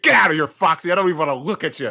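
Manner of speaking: mock angry shouting. Acting out Luffy telling Foxy off: Luffy yelling at Foxy. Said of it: "I just want Luffy to yell at Foxy".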